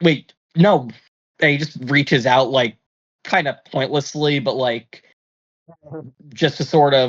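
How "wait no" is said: sudden, instant panicked, alarmed outburst. As time slows in his head, the character instantly panics: panicked. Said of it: "he instantly panics and he's like".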